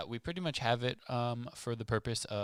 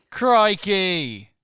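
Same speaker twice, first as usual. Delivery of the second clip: very loud, put-on Australian accent exclamation; 9 semitones higher, 18 dB louder than usual. Opening A Muggle's Perspective with a co-host, in a put-on Australian accent. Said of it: "We couldn't get through an Australian accent".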